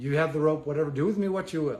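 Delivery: ordinary talk, nothing marked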